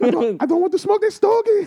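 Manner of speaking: very high, excited put-on Chinese accent. Asked to do a public figure talking about a cigar: Jackie Chan impression. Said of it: "now do Jackie Chan talking about a stogie".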